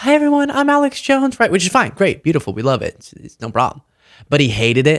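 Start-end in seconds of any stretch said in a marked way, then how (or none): 0.0-1.4 very high-pitched, dainty, delicate voice. Speaker imagines Alex Jones born with a different voice, high dainty Alex Jones voice. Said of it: "a really sort of high, dainty voice".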